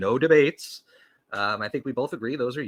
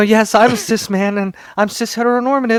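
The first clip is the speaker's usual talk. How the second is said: fake groveling, frightened, higher and louder; 10 semitones higher, 12 dB louder than usual. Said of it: "quivering in a corner".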